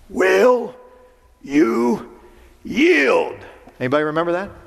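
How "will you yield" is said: commanding, authoritative, pitched up. Quoting Shakespeare, voicing the demand to the town's governor: very commanding voice. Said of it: "in a very commanding voice".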